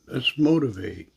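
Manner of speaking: plain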